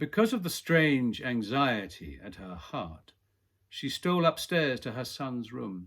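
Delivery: ordinary delivery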